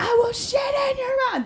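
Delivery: shrill, very high, repeated screaming. Speaker retelling a man screaming in the restaurant after not being seated, imitating someone screaming. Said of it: "keeps screaming this in the middle".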